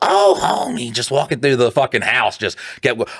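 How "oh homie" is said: very high-pitched cartoon-style voice. Retelling practicing voices at home: Marge Simpson voice. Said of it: "try Marge Simpson".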